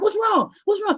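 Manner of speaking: alarmed, worried tone. Retelling running back after being urgently called over: retelling own panicked questions. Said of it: "So I'm panicking".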